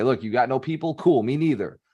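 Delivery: ordinary talk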